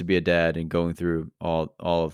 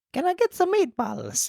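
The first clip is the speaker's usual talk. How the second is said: put-on Italian accent, pitched much higher. Told to try an accent, the actor delivers a line: Italian-accent Angela voice. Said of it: "Do an Italian Angela".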